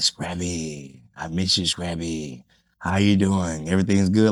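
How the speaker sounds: welcoming, boss-style mafia godmother voice. Retelling a meeting, the speaker quotes a woman who wanted to meet him: imitating a mafia boss. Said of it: "Like the great godmother or some shit".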